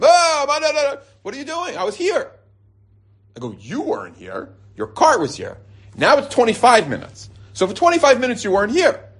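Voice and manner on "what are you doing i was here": very high, slow scream, long drawn-out what. Retelling how a man who left his cart in line reacted: imitating a man screaming. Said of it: "He starts screaming at me".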